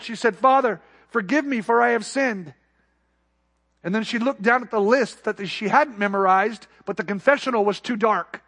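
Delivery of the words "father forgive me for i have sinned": put-on strong, heavy Spanish accent. Retelling a woman's memorized first phrase in the confessional booth, thick Spanish accent. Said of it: "with a thick Spanish accent".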